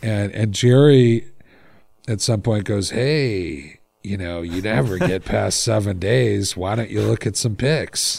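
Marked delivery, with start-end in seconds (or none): 2.9-8.2 "hey" drawn out, then a tempting tone. Quoting the tempting voice from the Brickhouse series: Jerry the Wolf voice. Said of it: "That's a pretty good imitation of the voice".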